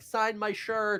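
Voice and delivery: high-pitched yell, shouting. Game master voicing the crowd below calling to the players, yelling from below. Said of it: "people are yelling at you".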